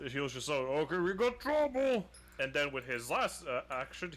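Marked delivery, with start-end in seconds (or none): 0.6-2.1 yelling in a character voice.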